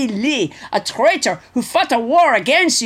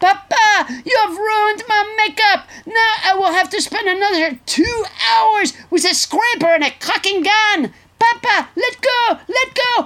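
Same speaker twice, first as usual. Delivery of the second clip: put-on yelling, pitched higher; 9 semitones higher than usual. Retelling Ivanka yelling at Papa about ruined makeup: imitating Ivanka yelling. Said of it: "and she yells".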